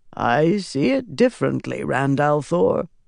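ordinary delivery, nothing marked

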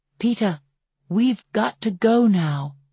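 ordinary delivery, nothing marked

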